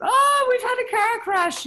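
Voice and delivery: put-on American accent, pitched way up. Retelling voices done on stage in a noise band: american accent. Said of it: "in an American accent".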